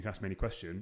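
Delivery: plain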